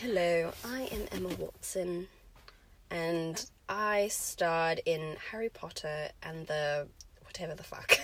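put-on exact, carefully enunciated, precise English accent. Doing an impression of Emma Watson, very precise English: Emma Watson voice. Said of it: "Emma Watson just has, like, the very precise English".

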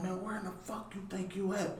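drill instructor voice.

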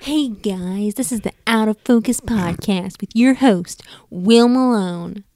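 put-on high-energy intro voice. Redoing the host's podcast intro with more energy: imitating Will Malone's energetic intro. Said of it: "It has much more energy like than this".

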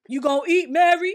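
forceful fatherly voice, very loud and high. Retelling how a dad used to talk at home, imitating his strong voice. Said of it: "he had that strong voice".

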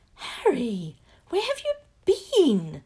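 shrill, swooping, very loud high squeal. Asking a returning boy where he has been, squeaking. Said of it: "Hermione squeaked".

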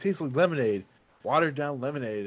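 usual speaking voice

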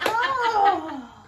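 high, loud mock heartbroken wail.

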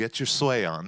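ordinary talk

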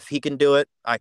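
ordinary talk, nothing marked

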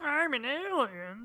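very high, squeaky cartoon alien voice. Joking about someone's plausible deniability, in a Marvin the Martian impression. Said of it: "that's a pretty good Marvin the Martian impression".

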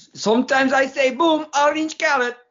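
very high, squeaky cartoon character voice. Ending the show with a sign-off line: Gru voice. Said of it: "that's Gru".

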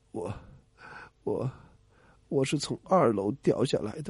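feeble, weak, strengthless, stammering whisper. Telling a joke, voicing the man answering the police, in a feeble voice. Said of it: "有气无力的说".

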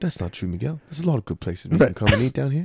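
put-on British English accent throughout. Imitating English listeners answering, English accent. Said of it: "Good accent".

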